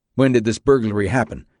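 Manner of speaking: plain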